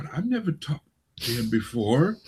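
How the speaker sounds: hushed, muttered under the breath. Retelling a guest's remark off the mic, imitating someone muttering under breath. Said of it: "I could hear her sort of under her breath saying".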